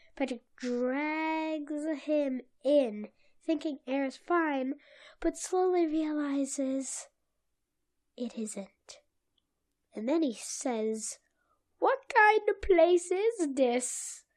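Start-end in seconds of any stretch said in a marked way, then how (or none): 11.8-14.2 bad, high-pitched, pitched-up cartoon character voice. Retelling a cartoon scene where Patrick asks about the place: horrible accent for Patrick. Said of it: "That's a horrible accent for that".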